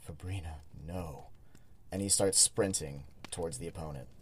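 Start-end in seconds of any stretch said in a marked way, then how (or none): 0.1-1.3 whisper under breath, much quieter and lower. Player voicing his character as he sees Fabrina fighting a brute, whispering under his breath. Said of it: "whispers under his breath".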